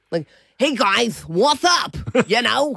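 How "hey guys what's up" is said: put-on New York accent with lisp, higher. Describing the voice imagined for their husky: Floyd the husky's New York voice. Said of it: "would talk maybe a bit New York-y".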